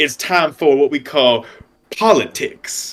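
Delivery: hammed-up, big, showy line reading. Retelling a movie line from Denzel Washington's role: Denzel Washington impression. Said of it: "doing his Denzel thing".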